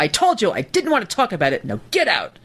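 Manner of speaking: shrill, high, swooping, angry scolding tone. Retelling what she yelled at someone, imitating a shrill yell. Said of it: "she she yelled at Ganji".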